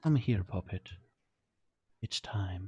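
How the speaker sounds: gentle motherly tone. A game master voices an unseen woman the players hear, motherly voice. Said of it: "you hear a motherly voice saying".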